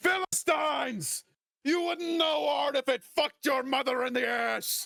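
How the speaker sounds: very high, shrill, enraged, furious screaming. Narrating a fight, the storyteller voices the wounded man screaming in fury. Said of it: "and he's just screaming".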